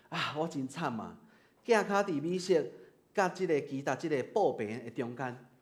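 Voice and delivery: ordinary talk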